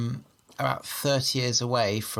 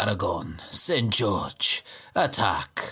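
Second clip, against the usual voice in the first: cool, put-on Spanish accent; 4 semitones lower than usual. Describing the Catalans' battle cry as they attack, cool Spanish accent. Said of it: "Only they say that in a cool Spanish accent".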